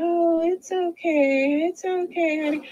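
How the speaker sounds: high, very slow, sugary, play-acted fake-nice coo. Retelling how she walked up to the child: imitating someone being real nice. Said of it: "she walks up like she's being real nice".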